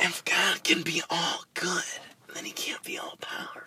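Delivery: soft, airy, breathy, almost whispered voice. After being told you tried to sound like Lex, do your Daniel Faraday impression. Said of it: "That was my Daniel Faraday impression".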